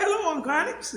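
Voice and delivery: put-on very high, nicely pitched little girl voice. Man recalling a girl at the store greeting him, imitating her nicely pitched voice. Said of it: "She had this nicely pitched voice".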